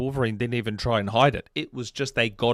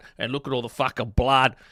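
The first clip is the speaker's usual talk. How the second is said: put-on broad, full Australian accent. Acting out how a game hooked players: broad australian accent. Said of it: "That's the most Australian you've ever sounded".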